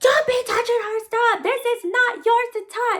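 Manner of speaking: acted-out very high, shrill, angry scolding yell. Retelling how the child's mother snatched the notebook: imitating someone yelling. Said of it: "And she's yelling".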